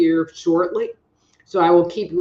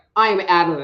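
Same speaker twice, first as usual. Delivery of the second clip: plain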